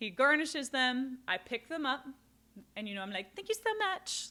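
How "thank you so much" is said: very high, little polite customer service voice. Retelling thanking her boss as she picks up drinks, little customer service voice. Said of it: "like in my little customer service voice".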